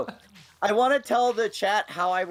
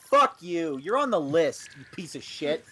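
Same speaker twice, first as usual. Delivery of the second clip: put-on fake angry tone; 2 semitones lower than usual. Retelling a reply to a friend's message: retelling own fake angry reply. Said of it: "reply back with just sheer anger and rage and threats".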